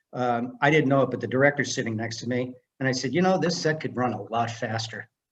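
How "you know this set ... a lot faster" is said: ordinary talk, nothing marked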